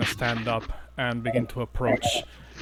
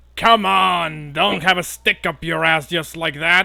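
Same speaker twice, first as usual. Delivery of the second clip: critter voice given a higher pitch; 5 semitones higher, 8 dB louder than usual. Voicing a goatling teasing a party member: voicing a goatling. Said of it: "you hear one of the goatlings, uh, say".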